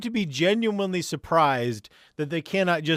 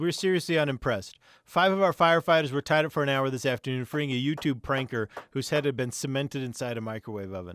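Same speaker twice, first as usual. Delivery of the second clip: plain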